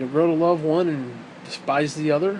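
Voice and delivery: ordinary talk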